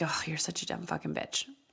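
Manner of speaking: mock muttering under breath. Retelling what a son said about the speaker: imitating muttering under breath. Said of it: "under his breath".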